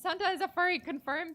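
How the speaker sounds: high, loud, excited joking blurt.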